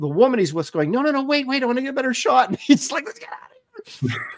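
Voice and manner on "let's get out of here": put-on frightened man's voice, much higher, quieter. Retelling what a frightened guy said to the woman with him, imitating a scared man. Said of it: "the guy was genuinely scared".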